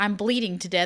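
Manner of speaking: ordinary talk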